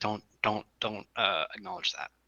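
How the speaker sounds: hushed, stammering, stumbling whisper. Whispering a warning to Hermione in character: whispering. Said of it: "whisper to Hermione".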